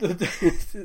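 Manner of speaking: speaking through laughter.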